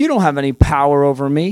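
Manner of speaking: put-on proud, boastful, lording-it-over tone. Jokingly quoting a biblical line said to a ruler, mock-proud, boastful delivery. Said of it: "I'm saying it with pride, being funny".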